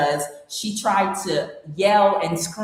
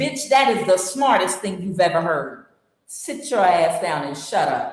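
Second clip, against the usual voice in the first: ordinary delivery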